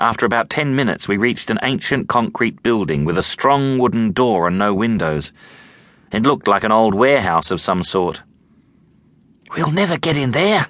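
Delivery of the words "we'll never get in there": desperate whisper, higher pitch. Amy stands before an old warehouse's strong wooden door, whispering desperately. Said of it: "whispered Amy desperately".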